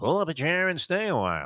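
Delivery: put-on feeble old-style ballpark announcer voice, high. Admitting it sounds little like him, attempt a very weak Vin Scully impression. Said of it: "sounds a little like Vince Scully when he goes".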